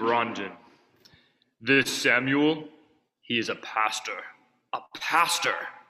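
deep, low-pitched voice.

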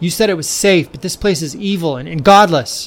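yelled outburst. Narrator reads Todd's words to Kate as she pulls him close, yelled. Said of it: "he yelled".

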